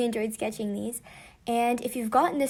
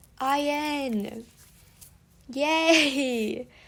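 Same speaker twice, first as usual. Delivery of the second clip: sarcastic delivery with a drawn-out N; 2 semitones higher than usual. Announcing the last member drawn, cheering in a sarcastic-sounding tone. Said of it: "I don't know why I sound sarcastic".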